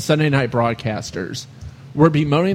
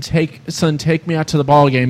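ordinary delivery

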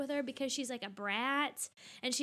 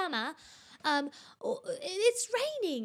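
imitated British child accent, much higher, slower; 6 semitones higher, 4 dB louder than usual. A mother retells what her little daughter says to her; imitating child's British accent. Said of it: "She thinks she's British".

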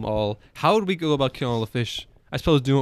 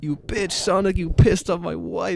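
high-pitched mild yelling; 5 semitones higher than usual. Retelling screaming at someone a few days ago: imitating own past screaming. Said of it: "I started screaming".

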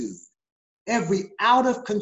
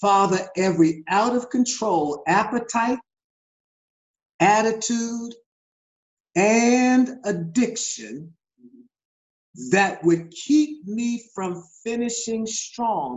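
slow, deliberate, unhurried, drawn-out delivery. Leading a prayer, talking slowly for those writing it down. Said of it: "I'm going to talk slow for those who are writing it down".

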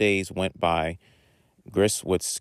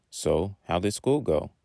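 plain

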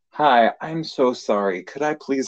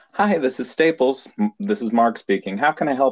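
put-on customer service phone voice; 4 semitones higher than usual. Speaker recalls how he answered the phone at work, customer service phone voice. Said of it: "you put on your customer service voice".

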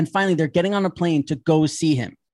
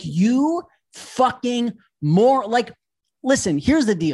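put-on, pitched-up ranting tone; 4 semitones higher than usual. Retelling watching a man spend $700 on Christmas decorations; retelling yelling at the TV. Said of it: "I'm yelling at the TV".

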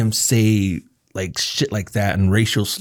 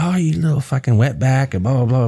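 mean, hateful, insulting tone; 3 semitones higher than usual. Retelling an uncle insulting a younger brother: imitating someone being hateful. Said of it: "he was very hateful like that".

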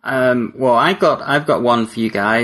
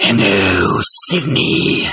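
creepy put-on voice from the throat; 2 semitones lower, 3 dB louder than usual. Showing friends what the voice might sound like, in a creepy voice. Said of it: "So creepy".

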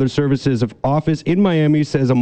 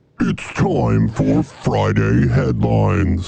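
deep, creaky, rasping demon voice; 4 semitones lower than usual. Introducing the Friday headlines segment of the program, in a demon voice. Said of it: "I don't know if I should have that demon voice going on".

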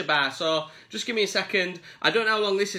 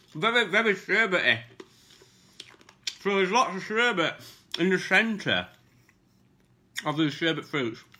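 talking with mouth full, chewing while speaking. Speaker tasting sherbet sweets on camera, talking with mouth full. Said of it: "I can't talk when I'm eating".

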